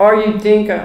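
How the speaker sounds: plain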